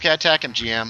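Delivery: ordinary delivery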